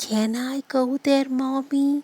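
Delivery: hushed, slow, soft, unhurried half-whisper. Explaining the word half-whispered with a child's question to mommy, half-whispering quietly and slowly. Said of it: "asking something quietly, slowly, like this".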